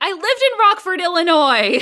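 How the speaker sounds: play-acted thrilled, eager, high-pitched shouting. Quoting a commentary track, imitating Lori Petty shouting excitedly. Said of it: "She gets really excited and starts shouting".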